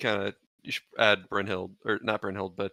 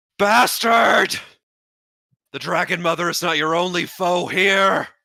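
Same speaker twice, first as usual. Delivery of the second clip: shrill, very loud, high-pitched screaming and hollering; 10 semitones higher, 11 dB louder than usual. Voicing Kalis running into the smoke: screaming. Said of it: "just screaming. Just hollering".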